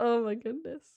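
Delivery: talking through laughter. Reacting to a funny chat comment: laughing while talking. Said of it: "Sorry, I'm laughing".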